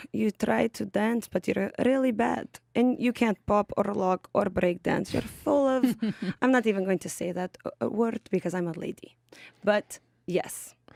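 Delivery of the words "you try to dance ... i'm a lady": put-on Russian accent. Answering a request to show a Russian accent: put-on Russian accent. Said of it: "What does your Russian accent sound like?".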